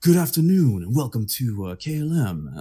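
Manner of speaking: grand, showy, slow on-air radio DJ patter. Imitating a man's KLM welcome announcement, showy radio DJ voice. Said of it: "Det var veldig sånn DJ-host, sånn radio-hosting-greie".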